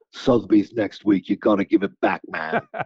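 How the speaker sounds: ominous, darkened tone. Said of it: "real like sort of like dark".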